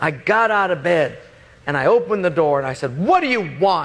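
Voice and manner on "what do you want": high, mock angry, fed-up annoyed snap. Woken up, opening the door to Wayne, retelling an angry, annoyed tone. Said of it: "But with that tone".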